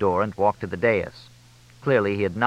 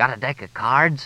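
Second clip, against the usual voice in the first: loud, theatrical stage whisper; 4 semitones higher than usual. Bob calls to Fletch during a moment of silence, in a stage whisper. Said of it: "Bob said in a stage whisper".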